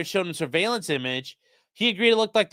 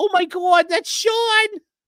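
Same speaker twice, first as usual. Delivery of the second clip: stunned, shocked outcry with voice pitched very high; 13 semitones higher, 4 dB louder than usual. Speaker imagining mom seeing her son on the news: imitating mom's reaction. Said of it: "Just thinking of my mom, like".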